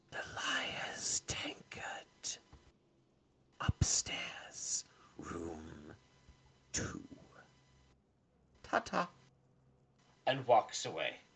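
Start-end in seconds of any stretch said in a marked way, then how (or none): 0.1-9.1 slow, hushed, leaned-in whisper. Voicing a figure who leans in to give information: whispering. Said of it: "He leans in and whispers".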